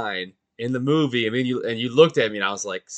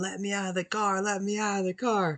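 high, pleading screaming; 9 semitones higher, 7 dB quieter than usual. Recounting a car scene from a 90s movie, retelling the woman's scream. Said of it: "she's like screaming".

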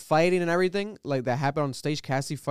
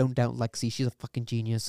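squeaky, soft put-on voice; 3 semitones lower than usual. Praising the actress who plays the stage director, the speaker imitates her squeaky soft voice. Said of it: "like squeaky soft".

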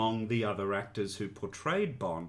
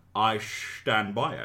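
put-on Scottish film-star voice; 4 dB louder than usual. Reading out a listener's fan mail, line in Sean Connery voice. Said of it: "in the voice of your best Sean Connery impression".

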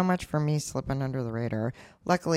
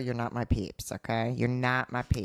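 normal talking voice

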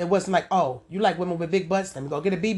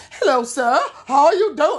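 bad English accent, much higher, louder; 9 semitones higher, 7 dB louder than usual. Acting out a southern woman attempting an english accent, in a bad english accent. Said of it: "they accent way off".

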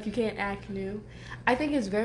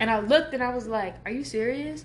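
plain

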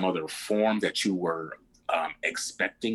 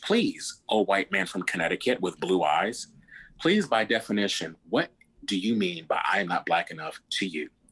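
put-on mildly sarcastic, arch, swooping tone. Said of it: "I might be a little sarcastic".

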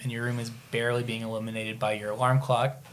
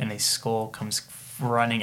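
ordinary talk

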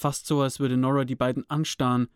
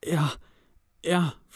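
hushed stage whisper; 3 semitones higher than usual. Toby answers Cody's shout to come before backing away, half-whispering quietly. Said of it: "flüsterte er leise".

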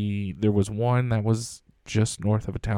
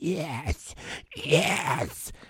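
hushed, whispered demonic woman's voice; 6 semitones higher, 5 dB quieter than usual. Recounting a voice heard on a cemetery recording, imitating the demonic female voice. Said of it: "demonic female voice of".

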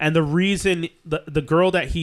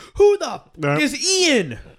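losing it, very high-pitched with pitch swinging; 12 semitones higher than usual. Retelling a big movie moment where the lead finds out: imitating John Cusack freaking out. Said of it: "Cusack freaks out".

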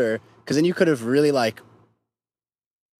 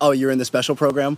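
ordinary talk, nothing marked

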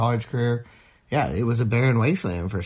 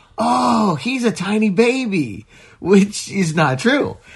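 put-on three-year-old, high, excited full-lung yell; 10 semitones higher, 6 dB louder than usual. Retelling a three-year-old's reaction to first picking Yoda, retelling a child's yell. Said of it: "he yells at the top of his lungs".

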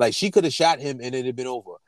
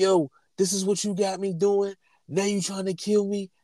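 put-on full-throated, high, screaming yell; 7 semitones higher than usual. Telling a story about a man who jumped on a car, retelling his screaming. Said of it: "he's screaming".

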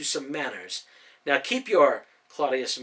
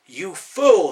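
very loud, high, snarling, insulting tone; 5 semitones higher, 11 dB louder than usual. A rider snarls at the man just thrown from his horse. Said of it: "the other rider snarled".

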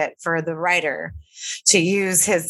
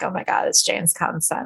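ordinary talk, nothing marked

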